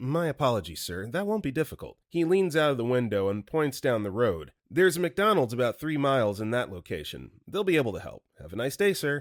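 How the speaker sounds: ordinary talk, nothing marked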